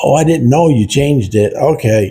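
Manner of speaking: play-acted high yell, as if from far away. Telling a story, acting out a nurse yelling across the building, imitating the nurse yelling back. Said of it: "the nurse yells back".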